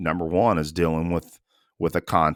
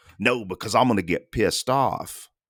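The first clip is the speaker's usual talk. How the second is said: acted heated outburst, very loud but kept light; 4 semitones higher than usual. Retelling what a guy at work said after throwing a chair: imitating someone saying it real loud. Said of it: "said it real loud".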